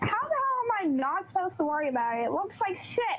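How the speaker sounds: snippy, sassy tone. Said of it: "I'm being a sassy little prick".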